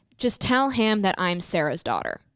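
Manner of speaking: ordinary talk, nothing marked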